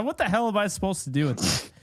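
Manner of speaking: rattled, flustered, high-pitched, rushed blurt. Stuck with a bad pick during a game, sounding flustered. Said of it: "I'm like flustered here".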